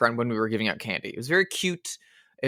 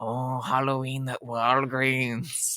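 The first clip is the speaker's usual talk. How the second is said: put-on slow, drawling old-noir character voice; 5 dB quieter than usual. Quoting Peter Lorre in an advert, joking: Peter Lorre impression. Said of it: "him being like".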